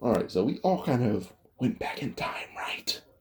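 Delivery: hushed, breathy whisper under the breath. Narrating a time-travel story, a character looks around and speaks to the others, whispering. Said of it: "why are you whispering?".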